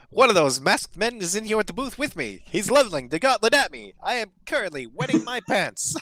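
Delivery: very high, loud, put-on skeleton announcer voice. Playing an announcer in the booth, doing a skeleton voice. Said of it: "Good skeleton voice".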